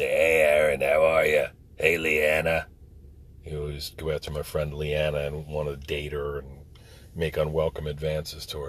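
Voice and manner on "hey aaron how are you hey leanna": gruff, rough, rocky, raised voice. Retelling how a man greeted the speaker and a friend, in a rough rocky voice. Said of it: "rough, rocky voice".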